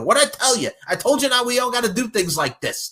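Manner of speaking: put-on yelling, pitched way up. Retelling a wrestling episode scene, imitating someone yelling at Big Vito. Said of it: "him yelling at Big Vito".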